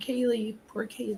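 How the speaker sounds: soft, hushed half-whisper, barely there. Asking a listener about the part where she said it, retelling her half-whisper. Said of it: "she like she whispers it".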